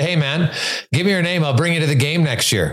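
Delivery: ordinary talk, nothing marked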